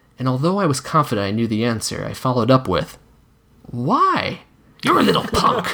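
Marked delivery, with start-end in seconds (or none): 4.9-5.8 snarled, high-pitched voice. A narrator reads a character's retort to the questioner, snarling. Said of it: "he snarled back".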